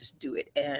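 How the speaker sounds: usual speaking voice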